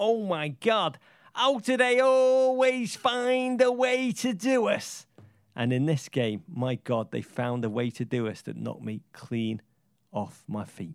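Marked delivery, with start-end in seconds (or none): 0.0-5.1 put-on very high, stretched-out screech. Retelling what a drunk Everton fan screamed while urinating at Wembley: imitating a drunk fan screaming. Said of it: "he just screamed at us".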